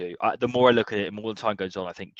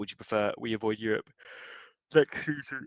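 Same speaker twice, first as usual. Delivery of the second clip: talking through a yawn; 6 dB quieter than usual. Speaking to the others in a group discussion: yawning while talking. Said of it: "I'm sorry for yawning".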